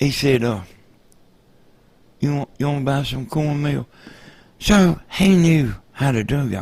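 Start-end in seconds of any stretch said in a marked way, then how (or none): 2.2-3.9 sorry, pitiful, pleading little voice. Retelling an old man at the door selling cornmeal: imitating a pitiful voice. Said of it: "talking in this kinda pitiful like voice".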